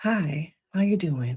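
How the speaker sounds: gentle, very soft-spoken, low-key professional voice. Toning it down for the chat, showing a very soft-spoken voice. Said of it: "I can be that person who has a very soft-spoken voice".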